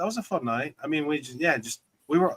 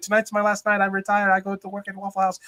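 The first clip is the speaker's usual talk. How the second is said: heaviest put-on Chinese accent, laid on thick; 6 semitones higher than usual. Retelling what a joking hibachi chef told the table: imitating a thick Chinese accent. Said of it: "the most thick Chinese".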